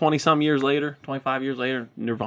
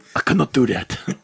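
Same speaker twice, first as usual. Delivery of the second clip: put-on devil voice with an accent; 2 semitones lower than usual. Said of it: "he sounds like he's Antonio Banderas".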